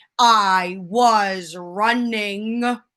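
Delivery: very loud shout at full volume. Retelling how dad shouted a movie line: shouting in Tom Hanks voice. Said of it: "in his best Tom Hanks voice".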